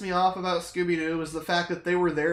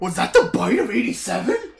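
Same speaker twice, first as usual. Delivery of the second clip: loud, swooping, barking cartoon dog voice; 2 semitones higher, 7 dB louder than usual. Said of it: "Why do you say it like Scooby-Doo?".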